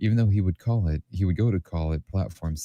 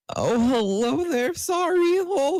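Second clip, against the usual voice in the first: very high, cracking, slow, drawn-out voice. Reading a story aloud, the narrator voices Draco with his voice cracking. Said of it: "his voice cracking more than my bones".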